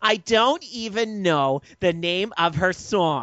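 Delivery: high, whiny, complaining delivery. Showing another person how to deliver the joke, sounding whiny. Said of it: "You have to sound more whiny when you do it".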